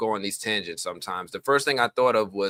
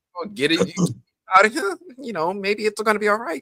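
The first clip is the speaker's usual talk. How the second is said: put-on shaky voice, higher and louder; 12 semitones higher, 4 dB louder than usual. Imitating Elgin telling Ellis things will be okay: shaky Elgin imitation. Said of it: "He was talking all weird and stuff".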